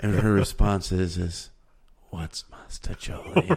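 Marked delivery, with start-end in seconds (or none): 2.2-3.5 soft, breathy whisper. Retelling how a woman answered being compared to Mastacholi, retelling a whispered question. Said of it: "she whispers it".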